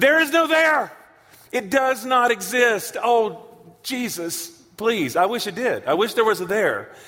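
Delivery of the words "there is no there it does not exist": raised, higher, hollered yell. Addressing the crowd, repeating the point, yelling again. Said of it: "but I want to do it again".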